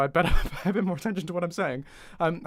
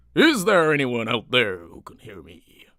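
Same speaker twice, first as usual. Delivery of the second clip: put-on raised, old sea-dog, sort-of pirate voice; 5 semitones lower, 7 dB louder than usual. Testing whether anyone can hear the microphone, in sort of pirate voice. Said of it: "I've turned into a sort of pirate".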